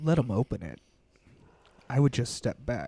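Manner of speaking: silky, smooth, velvety voice. Voicing the voice Zakira hears in her head, in a silky smooth voice. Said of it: "that silky smooth voice as it says".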